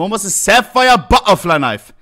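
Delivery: ordinary delivery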